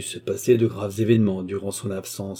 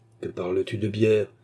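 plain reading voice

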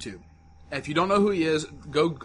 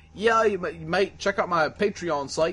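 slow, bad put-on English accent drifting Australian; 3 semitones higher than usual. Retelling what a man said about his patreon site, in a bad english accent. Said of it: "somewhere close to an English accent".

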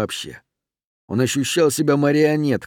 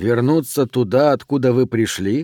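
plain

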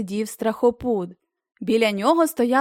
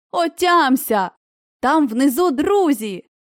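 slow, pressing call, close to the ear; 3 semitones higher than usual. Someone rouses a field marshal who hears nothing, shouting in his ear. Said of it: "крикнула на вухо фельдмаршалові".

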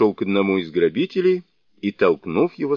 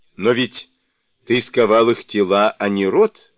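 plain

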